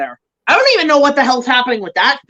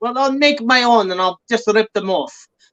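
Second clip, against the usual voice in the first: put-on Russian-sounding accent. Retelling how Del Toro reacted to not getting the rights, in a Russian-sounding Del Toro impression. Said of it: "I make him sound like a Rush, like fucking Ivan Drago".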